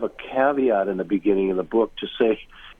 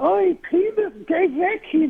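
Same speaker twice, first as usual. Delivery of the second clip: put-on high old-world old woman voice with Yiddish accent. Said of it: "She told me once in her accent".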